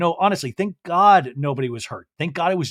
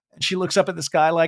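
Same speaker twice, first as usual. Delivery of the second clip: plain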